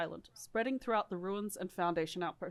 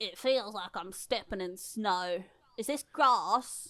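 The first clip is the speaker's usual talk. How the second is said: poor put-on Australian accent drifting toward British; 4 dB louder than usual. A player in a roleplay speaks after the group has landed, in a bad australian accent. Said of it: "you're doing like a shit attempt at an Australian accent".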